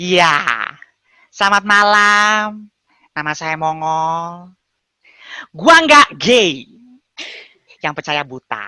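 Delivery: nasal, tinny voice, malam drawn out. Describing how Mongol talks, the speaker does a nasal shrill Mongol impression. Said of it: "suaranya dia tuh seperti menggunakan suara hidung, dicemprengin".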